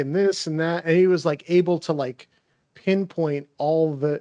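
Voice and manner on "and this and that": ordinary talk, nothing marked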